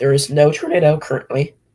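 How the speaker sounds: cracking, breaking voice. Reassuring listeners that there is no tornado, voice cracking. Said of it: "Sorry for the voice crack".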